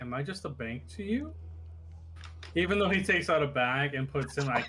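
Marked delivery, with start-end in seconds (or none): 0.0-1.3 flat expressionless deadpan delivery, quieter. Voicing a character who looks over at a player asking for money: deadpan.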